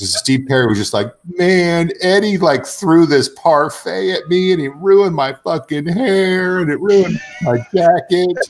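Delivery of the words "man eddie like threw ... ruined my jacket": mock, very high-pitched crying, weeping voice. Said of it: "the best impersonation of [name] crying".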